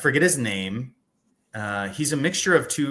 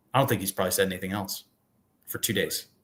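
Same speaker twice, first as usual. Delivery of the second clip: low, utterly deadpan put-on delivery; 4 semitones lower, 3 dB quieter than usual. Retelling a woman's answer to the speaker's question, imitating a deadpan reply. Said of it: "she just looks at me deadpan and says".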